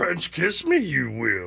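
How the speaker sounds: slow, drawn-out voice with big pitch swings. Joking about a spouse who talks like Yoda: imitating Yoda's voice. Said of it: "But she talks like Yoda".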